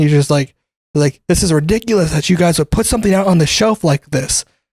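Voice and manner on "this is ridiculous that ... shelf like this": put-on indignant, irate, scolding ranting voice. Retelling a customer complaint about a smushed box: imitating a customer yelling. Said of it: "yelling at me".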